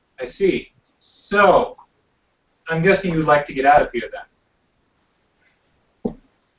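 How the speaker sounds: quiet, dropped voice. Speaking in character directly to a captive: lowered voice. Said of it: "I'm going to lower my voice and talk directly to her".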